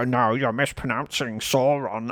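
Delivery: pedantic, know-it-all tone.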